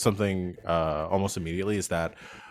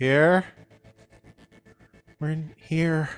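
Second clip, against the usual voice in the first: gentle, a little high voice; 9 semitones higher than usual. Voicing someone answering from inside a cave: soft voice. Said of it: "a sort of soft voice reply".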